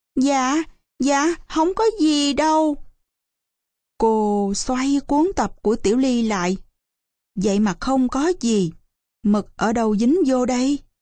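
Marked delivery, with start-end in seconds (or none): 0.2-2.8 faltering, hesitant, stammering, much higher pitch. Tiểu Ly answers the woman questioning her: stammering. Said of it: "nó ấp úng thưa".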